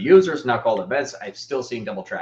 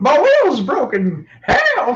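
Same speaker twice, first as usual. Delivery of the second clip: put-on shrill, high, booming old Southern grandma voice; 9 dB louder than usual. A speaker launches into a comic bit: old southern grandma voice. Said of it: "I don't know why she's also Southern".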